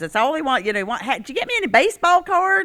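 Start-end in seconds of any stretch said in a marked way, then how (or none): 1.0-2.7 put-on light Southern accent, very high pitch. Describing someone who called about baseball cards, the speaker imitates his little southern accent. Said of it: "He's got this little southern accent".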